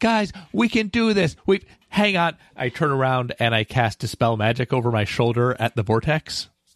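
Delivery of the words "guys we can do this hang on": high shouting voice. Playing a character, shouting to the group over the vortex noise, shouting. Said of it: "I'm shouting as the vortex is like making all this noise behind me".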